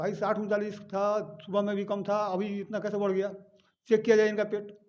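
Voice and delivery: ordinary talk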